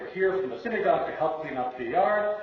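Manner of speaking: ordinary talk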